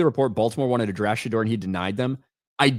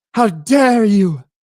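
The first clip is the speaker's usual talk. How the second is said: high, raised, indignant outburst; 9 semitones higher, 8 dB louder than usual. Reading out a message about a football pick, do your best Greta voice. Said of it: "in my best Greta voice".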